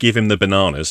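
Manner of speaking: ordinary talk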